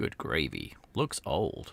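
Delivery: deep, low, slow American accent. Trying out a phrase as best you can, do Dwayne in your best American accent. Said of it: "in my best American accent".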